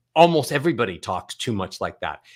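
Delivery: ordinary delivery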